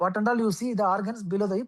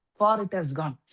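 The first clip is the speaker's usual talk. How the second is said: normal talking voice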